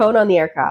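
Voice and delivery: normal talking voice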